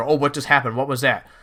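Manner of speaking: ordinary talk, nothing marked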